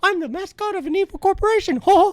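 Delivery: squeaky voice, loud and swooping. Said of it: "more of a Mickey Mouse thing".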